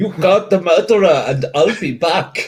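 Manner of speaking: put-on loud, high-pitched, belted Austrian accent. Voicing a character to the players in a role-play scene, Arnie Austrian accent. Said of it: "That was an Arnie Austrian accent".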